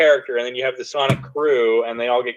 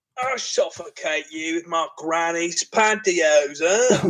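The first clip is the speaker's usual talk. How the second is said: fake, mock-angry British thug voice; 5 semitones higher, 5 dB quieter than usual. Describing an iconic British thug, the speaker acts out his lines in a put-on angry British thug voice. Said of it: "the angry British thug".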